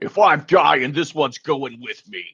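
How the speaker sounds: contained, mild yelled cry. Voicing an enemy hit in the back by an arrow: yelling. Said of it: "he yells out".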